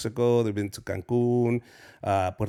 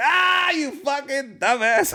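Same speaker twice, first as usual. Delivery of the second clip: very high, laughing, jeering mockery; 4 dB louder than usual. Retelling a comedian friend's reply while laughing: imitating Armando Anto laughing.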